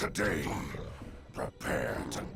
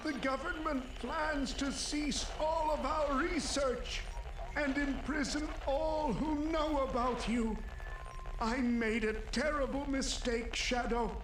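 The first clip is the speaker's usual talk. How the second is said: put-on old man's voice, pitched very high. Voicing a professor's recorded message to shadow: old man's voice. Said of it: "doing an old man's voice".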